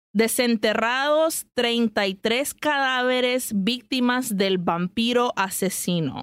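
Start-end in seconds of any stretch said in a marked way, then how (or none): none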